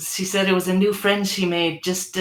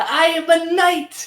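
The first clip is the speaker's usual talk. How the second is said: thrilled, higher and louder; 11 semitones higher, 4 dB louder than usual. Voicing a child who has just been knighted: excited. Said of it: "straightens up and gets really excited looking".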